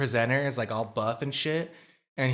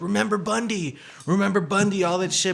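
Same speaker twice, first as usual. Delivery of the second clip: loud, pitched-up yell; 8 semitones higher, 5 dB louder than usual. Retelling how one man started yelling at another, imitating someone yelling. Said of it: "And then he starts yelling at him".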